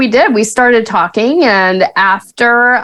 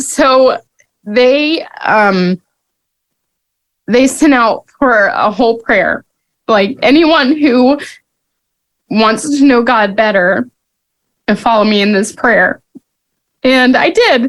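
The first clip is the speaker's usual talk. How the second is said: crying, tearful, speaking through tears; 2 semitones higher than usual. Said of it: "I don't know why I'm crying".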